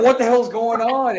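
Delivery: high, loud, surprised and startled outburst.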